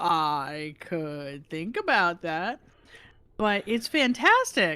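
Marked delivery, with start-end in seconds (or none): 0.0-2.6 slow, unhurried, deliberate, hesitant put-on voice. Retelling how another person reacted when asked about a project: imitating Lyash. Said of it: "that's a very good impression".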